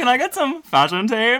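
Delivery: shrill, very high and loud, belted out. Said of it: "Your impersonation of her is, uh, terrifying".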